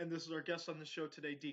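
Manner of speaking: ordinary delivery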